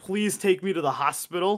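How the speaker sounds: acted very serious tone. Retelling the father's request to go to the hospital, imitating someone speaking very seriously. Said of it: "very seriously says".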